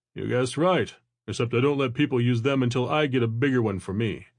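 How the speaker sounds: plain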